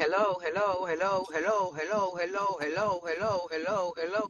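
low, soft, droning repeated hello.

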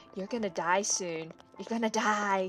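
eerie whispering. Creepily following a game character while playing: creepy whisper. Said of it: "just whispering things in her ear".

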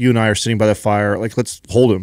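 plain

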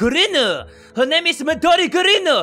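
put-on Japanese accent. Saying a student's name, told it's pronounced with a japanese accent: stereotypical japanese accent. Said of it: "pronounced in like a stereotypical Japanese accent".

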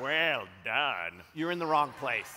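loud booming tyrant voice. Playing the first thing you see if you die, in the Emperor from Star Wars voice. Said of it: "that voice right there sounded more like the Emperor from Star Wars".

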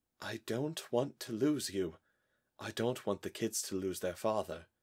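soft and fearful, almost afraid. A narrator reads a woman speaking to a man facing illness: soft, almost afraid. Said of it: "she said softly, almost afraid to speak the words".

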